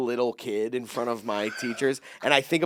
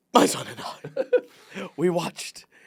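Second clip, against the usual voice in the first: mock choked-up voice, higher; 6 semitones higher than usual. Retelling another speaker's words, imitating someone choking up. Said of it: "He's getting choked up. He goes".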